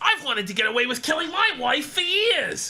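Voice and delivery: teasing, high-pitched parody voice. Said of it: "He goes".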